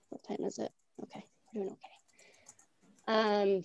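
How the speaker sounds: quiet, soft, low-volume aside. Presenting a wildlife crossing project, checking the time: quiet.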